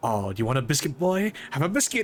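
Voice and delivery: mock cruel taunt, falsely sweet, swooping sing-song. Acting out tossing treats at someone: pretend horrendous taunting. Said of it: "you can be absolutely horrendous with it".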